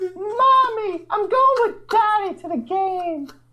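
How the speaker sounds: put-on very high, eerie, creepy little-kid voice. Acting out a kid going to opening day with Daddy, in a scary kid voice. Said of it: "That is the scariest voice".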